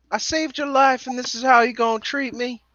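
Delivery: very high, bad, terrible put-on Southern accent. In an improvised scene, one character confronts another, terrible southern accent. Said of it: "Terrible Southern accent".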